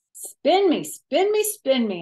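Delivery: loud, high, bouncy, sing-song repeated hollering. Narrator, having climbed up onto a giant spinny chair: hollered. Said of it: "I hollered".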